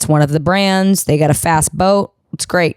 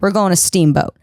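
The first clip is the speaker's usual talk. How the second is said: ordinary talk, nothing marked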